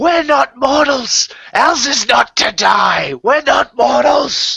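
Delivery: shrill, very high-pitched screaming. Voicing the character Zunquimstay mid-scene in the game, screaming. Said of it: "Zunquimstay just starts screaming".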